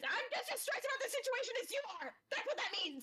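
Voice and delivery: very high, rapid-fire shouting outburst. Arguing in character, stressed about a third double: yelling in character. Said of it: "You don't have to yell at me".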